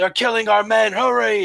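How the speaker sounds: very high, ragged, rough cheering yell. Narrating a scene, voicing someone the players hear from below: yelling. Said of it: "You hear someone yell".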